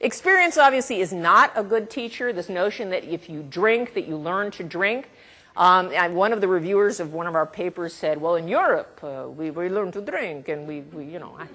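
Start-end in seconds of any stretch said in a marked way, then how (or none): 8.3-11.3 put-on Russian-accented voice. A speaker quotes a reviewer of one of their papers, in europe, russian accent. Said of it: "I don't know why I'm having a Russian accent".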